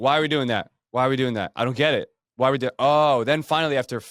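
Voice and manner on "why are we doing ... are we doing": put-on rude, disrespectful tone, faster. Recalling how they used to ask every question, retelling a disrespectful tone. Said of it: "not in the best tone of voice".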